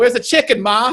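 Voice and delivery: put-on Jersey Italian accent. Describing a stereotypical jersey guy who lives with his mother, in a stereotypical italian jersey accent. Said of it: "stereotypical kind of like like Italian guy from Jersey".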